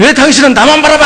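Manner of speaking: loud, high-pitched shouting.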